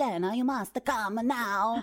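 put-on Italian accent, said in a pressing way. Retelling how a friend urgently called her over to collect something; she imitates him using an Italian accent. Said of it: "with his like Italian accent".

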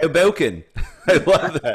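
shoddy fake British accent, loud. Repeating the other speaker's pronunciation of their town, in a shitty British accent. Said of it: "That's my shitty British accent".

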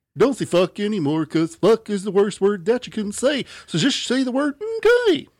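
very high, swooping, swinging lecturing voice. Explaining which character talks this way, in a Mr. Mackey voice. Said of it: "Mr. Mackey's the one that talks like this".

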